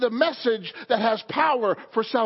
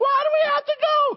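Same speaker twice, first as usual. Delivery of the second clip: whiny, crying demon voice, higher pitch; 13 semitones higher, 3 dB louder than usual. Acting out demons being told to leave: whining demon voice. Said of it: "they whine and cry".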